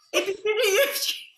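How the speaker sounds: very high, drawn-out, demanding aggressive dad voice. Doing an impression of your own dad, who hates it: mock-aggressive imitation of dad. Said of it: "The aggression".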